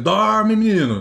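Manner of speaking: acted-out shout. Recalling how he only shouted from his room, retelling his shout. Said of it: "ele só gritava no quarto dele".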